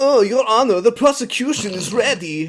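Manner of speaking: affected, put-on European rock-star accent, loud and high. Acting out what a teenager used to say in court role-play, affected Euro rock star accent. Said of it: "he's putting on this like Euro affected rock star accent".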